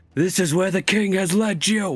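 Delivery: shouting over crowd commotion. Playing a character calling out over the crowd's commotion: shouting over a crowd. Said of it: "shout out over the commotion".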